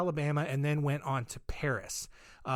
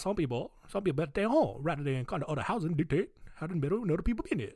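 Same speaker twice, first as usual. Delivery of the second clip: fast, put-on Cajun accent. Voicing how a man from New Orleans probably sounded, speak in a Cajun accent. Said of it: "this would be a great opportunity to unleash Cajun accent".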